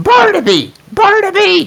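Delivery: yelling loudly. Shouting a name to a character who asked them to speak up: shouting. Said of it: "Not so loud".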